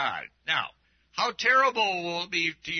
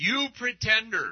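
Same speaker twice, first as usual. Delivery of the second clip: put-on drill sergeant voice; 5 semitones higher than usual. Reading a gospel rebuke aloud, the speaker voices it as Jesus as drill-sergeant commander. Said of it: "more like his drill sergeant command voice".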